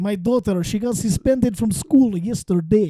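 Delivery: casual, put-on Russian accent. In an accent game, told to say something organic, Russian accent.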